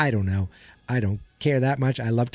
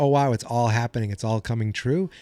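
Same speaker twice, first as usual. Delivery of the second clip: ordinary talk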